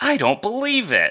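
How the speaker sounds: high, fed-up, exasperated, oh-brother delivery. Imitating an actress's line read in a film: imitating an exasperated line read. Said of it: "it sounds like she's going, "Oh, brother."".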